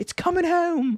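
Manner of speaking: terrible put-on British accent, high-pitched. Talking about the Suns, saying it as the British would: terrible British accent. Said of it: "it's a terrible British accent".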